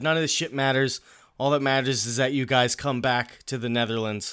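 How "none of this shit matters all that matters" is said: plain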